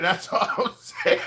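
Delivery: breathy, half-whispered words broken by laughing. Reacting to a story about church animal sacrifice, laughing while talking. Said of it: "I can't stop laughing".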